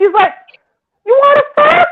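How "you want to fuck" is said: play-acted, very high-pitched hollering. Retelling how a woman outside the back door was yelling: imitating a woman yelling. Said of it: "And she's yelling".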